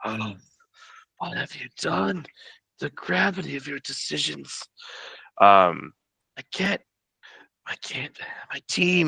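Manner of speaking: high, desperate, pleading cried-out stage whisper. Narrator voicing KT-1 at the top of the round, crying out in a whisper. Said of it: "cries out, but again in a whisper".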